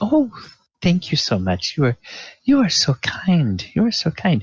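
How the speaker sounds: acted tittering while talking. Voicing a manicurist thanking a player: acted tittering while talking. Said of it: "she titters a little bit".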